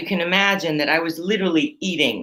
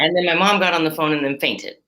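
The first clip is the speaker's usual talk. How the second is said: plain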